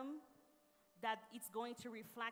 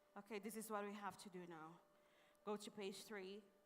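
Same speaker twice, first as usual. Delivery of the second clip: flat, dull, bored, uninterested monotone; 4 dB quieter than usual. Demonstrating a boring voice giving class instructions, flat, bored voice. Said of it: "If I start using my voice just like this. ... Boring, right?".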